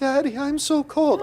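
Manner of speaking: put-on slow, high, drawn-out, whiny little-girl whimper.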